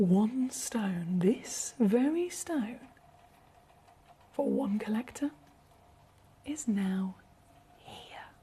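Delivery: hushed whisper. Presenting an item in the sale to viewers, whispering. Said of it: "I feel like I have to whisper with this".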